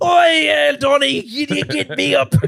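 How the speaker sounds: put-on, loud, very high Scottish accent. Speaker imitates Trump's mom addressing Donnie, in a Scottish accent. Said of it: "Scottish accent".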